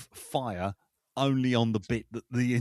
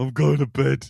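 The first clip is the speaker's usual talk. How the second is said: sad put-on monster voice, getting louder; 3 semitones higher, 9 dB louder than usual. Acting out Godzilla turning to Mothra: sad Godzilla voice. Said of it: "Turning to Mothra going".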